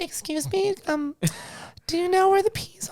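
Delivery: soft put-on woman's voice. Showing the voice used behind coworkers at work, put-on female voice. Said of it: "can you do any female like voices".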